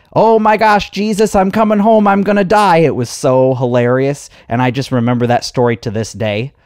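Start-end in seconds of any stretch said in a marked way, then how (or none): 0.1-2.7 very high, loud, wailing banshee shriek. Retelling her mom on an amusement park ride; imitating mom screaming. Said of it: "my mom was screaming like a little banshee".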